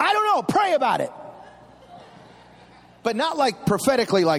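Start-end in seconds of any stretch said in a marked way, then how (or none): 0.0-1.1 put-on irritated, annoyed, sarcastic tone, pitched up. A father retells how he answered his six-year-old son, retelling a sarcastic, annoyed reply. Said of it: "And I sarcastically, a little annoyed".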